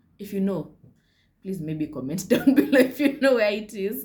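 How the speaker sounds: loud speech broken up by laughter. Speaker asks viewers to answer in the comments, laughing while talking. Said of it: "I'm sorry, I'm laughing".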